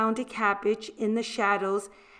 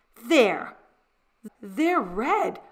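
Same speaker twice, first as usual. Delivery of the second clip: stunned, disbelieving stammer; 3 dB louder than usual. The narrator, handed stockings by a nun as the room laughs, stammering in disbelief. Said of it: "I stammered in disbelief".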